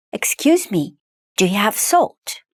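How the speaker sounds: ordinary talk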